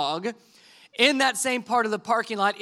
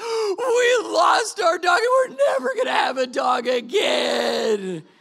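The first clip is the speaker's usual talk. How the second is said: mock tearful bawling, higher pitch; 8 semitones higher than usual. Retelling how the oldest son reacted to losing the dog: imitating bawling in tears. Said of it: "He starts just bawling and in tears of".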